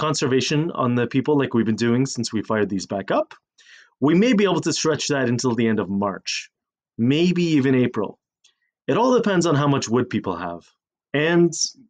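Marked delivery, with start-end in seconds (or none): none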